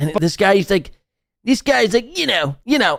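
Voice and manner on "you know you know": put-on broad Philadelphia accent, heavily laid on. Speaker imitates the quintessential guy from philadelphia: thick philly accent. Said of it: "that northeastern Philly accent".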